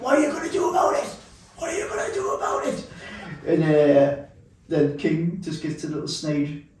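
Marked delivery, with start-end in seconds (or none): 0.0-2.9 put-on very high-pitched repeated scream, wrestler voice. Retelling a wrestling Royal Rumble moment: imitating Bret Hart screaming. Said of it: "he's screaming".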